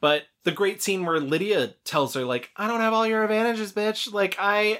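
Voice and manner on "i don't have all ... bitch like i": high, fast, mock whine like a bratty teen. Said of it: "that was me doing my James Lipton".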